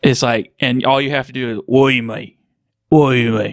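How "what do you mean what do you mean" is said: quick, rough British voice. Showing how to do a Statham impression: Jason Statham impression. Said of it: "the easiest way to do a Statham impression".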